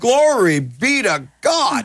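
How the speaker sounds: slow, high-pitched, drawn-out Southern drawl. Retelling what Gloria Copeland said when persecuted: Gloria Copeland southern drawl. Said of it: "in her southern drawl".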